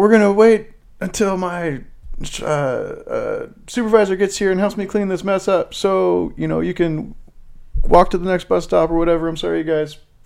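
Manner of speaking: very high-pitched bus-driver PA announcement voice. Retelling the bus driver's PA announcement: imitating the bus driver on the PA. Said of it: "He's like".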